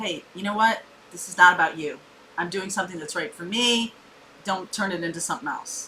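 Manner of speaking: ordinary delivery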